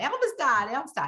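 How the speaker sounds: put-on child voice, yelling. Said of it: "He was running up down the street yelling".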